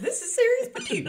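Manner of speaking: exaggerated fake voice crack. Repeating the show's intro line after noticing a crack: exaggerated fake voice crack. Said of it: "until you over-exaggerated it".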